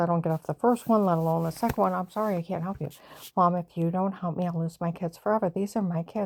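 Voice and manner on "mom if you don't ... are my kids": ordinary delivery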